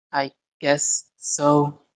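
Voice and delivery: utterly dejected, beaten, really defeated resignation. A character answers a companion's question, really defeated. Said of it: "She says with a really defeated".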